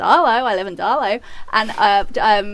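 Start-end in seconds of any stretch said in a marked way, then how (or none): 0.0-1.2 put-on Australian accent. Showing the only thing that can be said: put-on australian accent. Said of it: "the only thing I can say in an Aussie accent".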